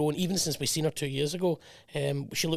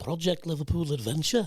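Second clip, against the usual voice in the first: Liverpudlian accent, put on. Repeating a project's code name for a co-host, in a Liverpudlian accent. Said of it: "I'll do it in Liverpudlian".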